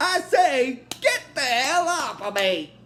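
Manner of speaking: put-on high-pitched British accent. Recounting a scene, as Bender in his British accent. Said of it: "in his British accent".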